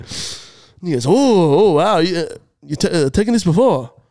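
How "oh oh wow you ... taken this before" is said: wired, jittery, hyped-up voice, stuttering and buffering. Retelling what a store clerk said at the counter: imitating a jittery hyped clerk. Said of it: "he was talking like he'd just taken some of the pre-workout".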